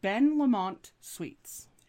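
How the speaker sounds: slow, fake French accent.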